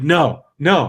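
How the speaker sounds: play-acted super irritated, pissed-off, furious tone. Retelling a woman's reaction, the speaker is imitating someone furious. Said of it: "genuinely like super pissed off".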